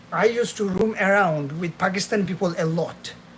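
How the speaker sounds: ordinary talk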